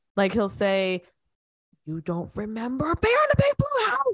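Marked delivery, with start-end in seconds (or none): 1.9-4.2 put-on sudden, very high, rising yell. Retelling how Adam Sandler starts yelling in his movies: imitating Adam Sandler yelling. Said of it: "but then he'll start yelling".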